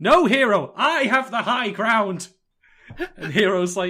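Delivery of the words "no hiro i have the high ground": high-pitched, loud yelling. Acting out Goro in a joke scene, yelling at Hiro: yelling as Goro. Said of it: "Goro's there yelling at Hiro".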